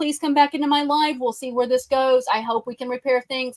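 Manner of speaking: usual speaking voice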